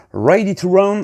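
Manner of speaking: fancy, slick English accent. French speaker explaining a model abbreviation, in an English accent. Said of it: "avec un accent anglais à, euh, incroyable, incroyablement stylé".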